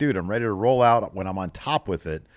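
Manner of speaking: usual speaking voice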